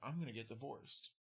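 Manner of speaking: whispered, very quiet and hushed. Retelling what the groom said into the speaker's ear: imitating a whisper. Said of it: "whispers in my ear".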